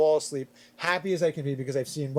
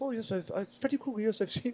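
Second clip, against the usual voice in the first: put-on halting English with French accent, pitched higher; 6 semitones higher, 7 dB quieter than usual. Retelling what a French exchange kid answered about Freddy Krueger: Julian's French accent. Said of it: "French accent".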